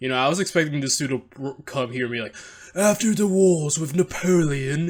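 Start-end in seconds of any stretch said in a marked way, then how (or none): 2.7-4.9 butchered, pitched-up British narrator accent. Speaker imagines a history narrator with a British accent; bad British narrator accent. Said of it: "I'm sorry I butchered your great accent".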